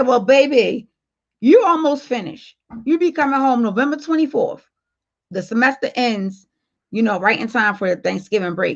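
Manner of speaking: normal talking voice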